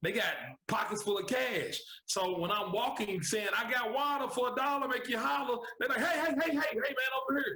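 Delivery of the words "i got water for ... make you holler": put-on loud yelling, much higher. Telling how they sold water to thirsty people at the tents, retelling own loud yelling. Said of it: "because I was using my loud voice".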